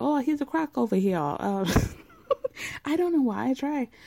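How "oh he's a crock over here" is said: fast, clumsy, bad put-on Cajun accent. Describing a swamp tour guide, doing a bad Cajun accent. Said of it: "I try to do a Cajun accent".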